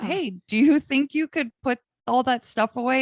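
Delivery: mock sarcastic, asking-style rising tone. Retelling asking someone to put things away: retelling a sarcastic request. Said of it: "I was sarcastic".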